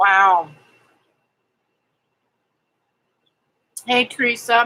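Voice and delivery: speech muffled by food in mouth. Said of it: "Sticking the last bit of my lunch in my mouth".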